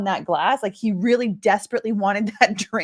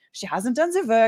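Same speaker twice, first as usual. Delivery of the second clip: bad, terrible put-on fake French accent. Quoting a complaint that a woman hasn't done the work: terrible French accent. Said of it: "That is a terrible, terrible French accent".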